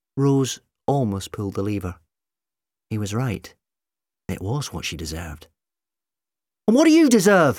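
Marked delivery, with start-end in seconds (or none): 6.7-7.6 very high-pitched, shrill shouting. The narrator reads Rose shouting at McCavity: shouted. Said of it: "Rose shouted at McCavity".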